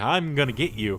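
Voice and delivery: ordinary talk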